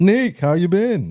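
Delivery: drawn-out voice, high pitched and slow. Doing an impression of the regular co-host: imitating C L. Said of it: "do my best C L impression".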